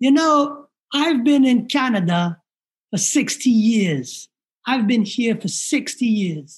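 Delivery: clumsy, bad put-on Jamaican accent. Quoting a woman who spoke to him, using a bad jamaican accent. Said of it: "my Jamaican accent sucks".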